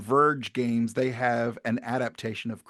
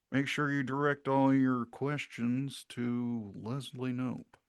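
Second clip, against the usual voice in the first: put-on deadpan actor voice, quieter; 6 dB quieter than usual. Doing an impression for another speaker: Nick Offerman voice. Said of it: "it's a pretty good Nick Offerman".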